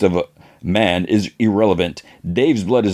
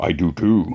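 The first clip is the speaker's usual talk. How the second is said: put-on deep voice, lower, much slower; 3 semitones lower than usual. Recapping a scene, quoting Grim's reply to Mike; Grim's deep voice. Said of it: "Then Grim in a deep voice".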